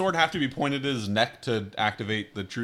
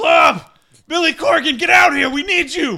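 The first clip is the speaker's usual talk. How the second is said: yelling, much higher pitch and louder; 12 dB louder than usual. Out in the courtyard, calling into the castle for two others to come out: yelling. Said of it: "project my jizz voice into the castle to yell".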